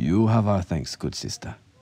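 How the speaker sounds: ordinary delivery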